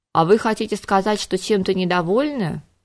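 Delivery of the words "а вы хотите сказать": usual speaking voice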